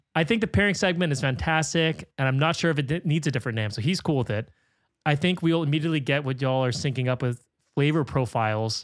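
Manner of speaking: ordinary talk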